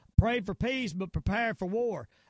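ordinary talk

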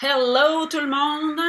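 light put-on English accent. Greeting everyone, in a slight English accent. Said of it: "avec mon petit English accent".

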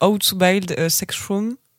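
slow, drawn-out English accent. Saying an english show title aloud: english accent. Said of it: "avec mon magnifique accent anglais".

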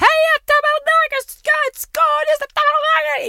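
very high, very slow, drawn-out idiotic yelling. Retelling a construction worker calling to abdelmordor, imitating a man yelling like an idiot. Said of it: "il criait comme un vrai débile".

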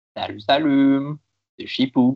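loud speech around a mouthful of food. Greeting the audience at the start of a christmas live stream, talking with mouth full. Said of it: "Chipou qui a clairement la bouche pleine, ça s'entend".

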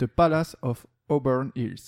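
poor English pronunciation. Reading a quiz question aloud, apologizing first: bad English accent. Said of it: "excusez-moi pour mon accent anglais".

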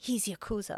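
very quiet, breathy, hushed whisper. Retelling a movie scene where one character warns another: retelling a whisper. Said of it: "says to him in a whisper".

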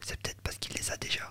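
quiet and gentle. Recounting what Emmanuel said to him, very softly. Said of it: "tout doucement".

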